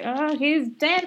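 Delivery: drawn-out, fed-up loud yell.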